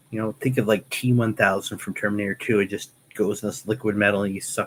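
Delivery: ordinary delivery, nothing marked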